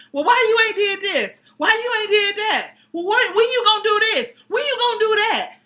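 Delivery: nagging in a very high-pitched voice. Acting out how not to keep reminding him, mock-nagging tone. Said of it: "don't keep nagging like".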